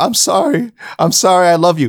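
acted, blubbering, tearful sobbing, very high pitch. Retelling a fighter crawling over after a fight: imitating Uriah Hall sobbing. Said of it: "He's sobbing, going like".

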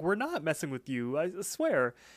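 confused, puzzled voice with swooping intonation. Retelling a cartoon scene where Mordecai is confused: Mordecai, put-on confused voice. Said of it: "is super confused".

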